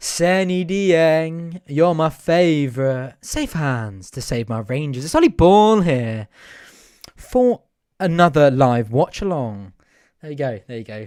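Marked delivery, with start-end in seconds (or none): 0.0-9.7 loud, slow, deliberate announcing, "Dieng" drawn out. Doing an impression during a live watch-along: Ollie Ball impression. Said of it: "that's my best Ollie Ball impression".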